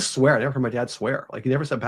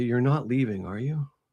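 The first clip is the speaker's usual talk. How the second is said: mock sad female voice, quieter; 6 dB quieter than usual. Retelling a voice heard at a house: imitating a sad female voice. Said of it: "And it was so sad".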